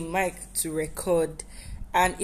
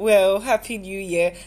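said with a smile; 3 dB louder than usual. Speaker addresses the listeners of the recording; smiling. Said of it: "I am literally smiling".

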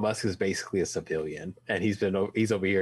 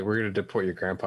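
ordinary talk, nothing marked

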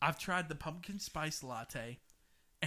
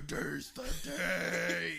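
bad creaky put-on voice with rough edges; 3 semitones higher than usual. Retelling what a friend said about the latte: bad impersonation of Kristen. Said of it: "That's still a bad impersonation".

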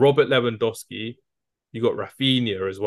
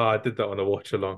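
normal talking voice

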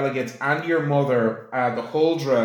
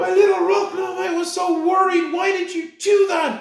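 very high, doting, fretful mother voice. A game master voices the player character's mother greeting him, voicing the huldra mother. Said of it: "The two dwarven delegates and your mother, the Huldra, / your mother runs straight towards you and throws her arms around you and says, / your mother runs straight towards you and throws her arms arou".

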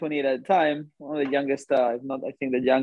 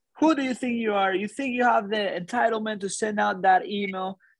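mock furious screaming, higher; 7 semitones higher than usual. Retelling how an executive screamed at the boss in front of everyone: imitating someone screaming. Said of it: "Like this".

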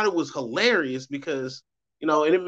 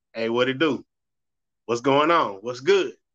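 laid-back, easygoing casual talk; 3 semitones lower than usual. Speaker shows how they answer their personal phone: imitating casual phone greeting. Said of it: "if I answer my personal phone".

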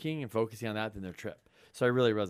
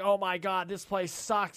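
acted, high-pitched, disgusted and pissed-off griping tone; 8 semitones higher than usual. Acting out guests who arrive at a dirty rental: imitating angry guests. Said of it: "And they're fucking pissed off".

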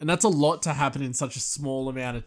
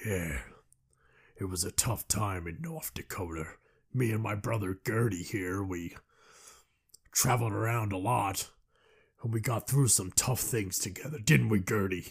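put-on Canadian drawl with lower pitch; 4 semitones lower, 6 dB quieter than usual. Retelling a movie scene, quote Liam Neeson with a slight Canadian drawl. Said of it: "a bit of a Canadian drawl".

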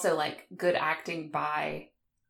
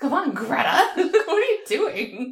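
loud, animated yell, pitched up; 9 semitones higher, 7 dB louder than usual. Friends recall watching horror movies together; retelling yelling at the screen. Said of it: "We were like yelling".

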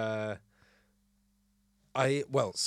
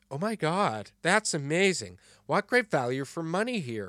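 put-on obnoxious, loud American accent. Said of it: "very obnoxious, very loud American accent".

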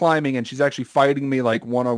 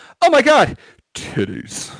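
very slow, lingering, swooping delivery; 8 semitones higher than usual. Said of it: "just like you do in your penthouse voice".

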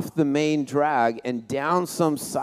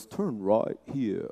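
bad put-on English accent, quieter; 5 semitones lower, 6 dB quieter than usual. Imitating the English guy's voice his daughter has, do a terrible English accent. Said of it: "the English guy's voice".

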